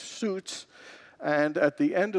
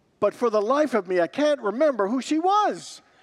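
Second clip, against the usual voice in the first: high, put-on panic-stricken blurt; 8 semitones higher, 4 dB louder than usual. Retelling an anecdote and voicing what a man said: retelling a panicked blurt. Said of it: "Then he became panic-stricken, and he blurted out".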